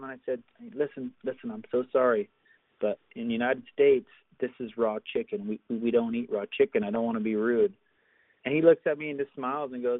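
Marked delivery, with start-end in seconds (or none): none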